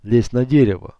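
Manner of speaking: ordinary delivery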